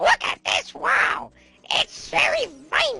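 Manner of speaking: squeaky put-on mushroom voice. Commenting on a game wall in a Toad voice. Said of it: "Did I sort of sound like Toad there?".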